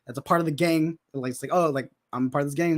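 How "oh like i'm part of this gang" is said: plain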